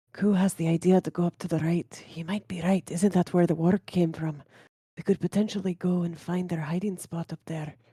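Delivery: whispering in a character voice. Playing a character who creeps behind Domik: whispering in character. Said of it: "very quietly just go right up behind Domik and whisper".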